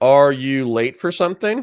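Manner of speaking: snide, smart-ass, sarcastic little jab. Asking a late guest if he is late: smart-ass sarcastic tone. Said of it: "I'm being a smart ass".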